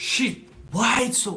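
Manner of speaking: frustrated outburst, high, slow exasperated groan.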